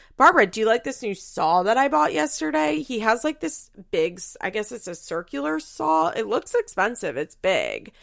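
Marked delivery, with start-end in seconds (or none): 0.2-2.8 sarcastic, pitched-up, put-on interest. Retelling what a man said walking into the kitchen, retelling a sarcastic question. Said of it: "I was being sarcastic".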